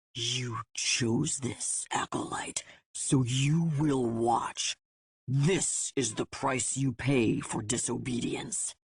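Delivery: hissing through the teeth. Narrator reads a threat to the acolyte, hissed between the teeth. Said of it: "he hissed between them".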